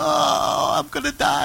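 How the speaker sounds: put-on very high, creaky, drawn-out babyish little-boy whine. Recounting giving medicine to a little boy: imitating a screaming little boy. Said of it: "he was screaming".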